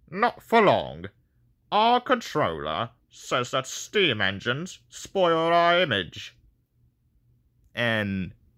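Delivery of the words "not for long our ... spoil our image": high character voice, pitch swooping around. Showing the person who will voice him how D199 should sound, D199 voice. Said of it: "this is what I want D199 to sound like".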